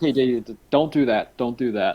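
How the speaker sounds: mock annoyed tone. Retelling how he told someone to stop: imitating someone annoyed. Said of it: "he was just very clearly annoyed".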